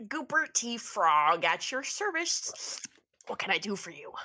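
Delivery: put-on frog character voice. Answering a call from Ernest in character: Goopy Teeth Frog voice. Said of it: "and then you hear "Hello."".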